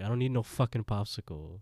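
ordinary delivery

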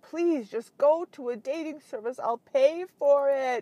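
put-on tearful pleading. Retelling a father's plea to use a dating service: imitating someone near tears. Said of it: "almost in tears, crying".

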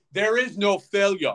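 mock Greek accent, slowed. Doing the Giannis press conference for the others, in a Giannis impression mistaken for Schwarzenegger. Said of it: "Is that Arnold Schwarzenegger?".

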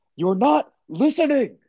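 acted very high-pitched, stern, upset yelling outburst. Retelling a movie scene where Adam Driver yells at Rey: imitating Adam Driver yelling. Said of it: "he literally yells at Rey and goes".

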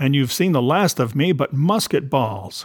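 ordinary delivery

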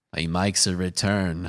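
put-on slow, drawling, poorly done Australian accent. Joking about a cameo in the new movie: Quentin Tarantino Australian accent. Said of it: "That's my Quentin Tarantino Australian accent".

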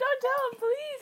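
put-on high, crying, tearful pleading voice. Retelling a plea to a kid at school: imitating own past crying plea. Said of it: "I was, like, crying".

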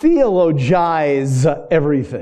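very slow, low, deliberate, drawn-out enunciation. Speaking to listeners, the speaker says a word they can't say fast: really slow. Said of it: "I have to always say that really slow".

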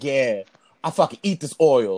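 deep, put-on, boastful macho tough-guy swagger. Joking about posing while hot oil spatters during cooking: put-on manly tone. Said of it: "Do I look manly for the OnlyFans?".

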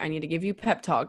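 ordinary talk

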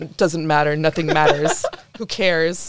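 dejected, depressed, gloomy nothing-matters voice. Retelling a film scene where a character answers a friendly stranger: imitating a depressed character. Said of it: "May is sitting there being depressed".

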